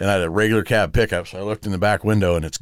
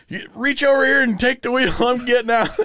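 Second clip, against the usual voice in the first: put-on very high, urgent, barked yell. Retelling yelling at the guy from a moving truck: retelling a yell. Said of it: "I'm yelling at the guy".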